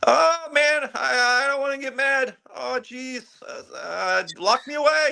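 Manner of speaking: timid, very high, slow, scared, nervous whine. Describing how Bruce Banner is usually portrayed, the speaker acts him out: timid Bruce Banner impression. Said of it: "that chicken shit baby face where he".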